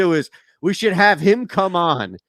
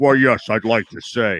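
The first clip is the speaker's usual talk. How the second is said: very low, movie bad guy voice; 6 semitones lower than usual. Imitating a woman's voice that sounded like a movie bad guy: imitating the bad guy's voice. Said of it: "that's the bad, how the bad guy sounds".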